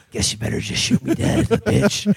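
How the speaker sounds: rough, raspy, creaky tough-guy voice. Retelling a movie scene, imitating Clint Eastwood. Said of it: "And he's like".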